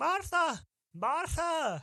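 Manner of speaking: high, loud calling-out shout. The speaker's character goes around calling for Martha, shouting a name. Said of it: "start going around shouting".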